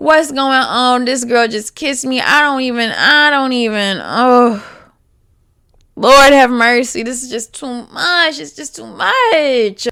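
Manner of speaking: bewildered, confused, disbelieving, rambling and repeating itself. Retelling how he reacted after being kissed: imitating confused rambling. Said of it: "He is so confused".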